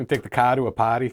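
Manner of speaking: put-on Boston accent. Joking about how people from boston say words: imitating a boston accent. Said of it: "Unless you're from Boston".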